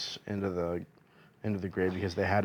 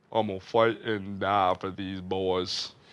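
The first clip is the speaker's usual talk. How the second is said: put-on tearful Louisiana accent. Retelling a player's post-pick interview answer: imitating Will Campbell's fake ugly cry in a Louisiana accent. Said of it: "ugly cry, big guy cry, Louisiana accent".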